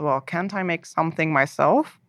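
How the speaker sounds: plain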